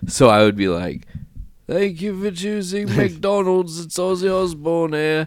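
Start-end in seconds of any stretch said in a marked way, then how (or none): 1.7-5.3 voice pitched way up high. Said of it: "today I'm doing impressions".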